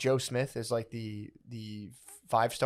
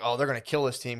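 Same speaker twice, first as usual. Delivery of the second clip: ordinary delivery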